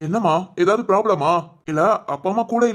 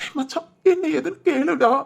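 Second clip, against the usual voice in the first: high-pitched, tearful crying voice. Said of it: "நடு ரோட்ல நின்னு அழுதுகிட்டு இருக்க".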